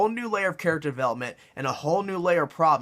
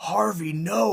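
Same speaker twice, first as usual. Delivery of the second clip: gritty caped-hero voice, rough, creaky, raspy, pitched up; 5 semitones higher than usual. Retelling how the hero pleads with Two-Face: imitating Batman. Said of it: "he's like".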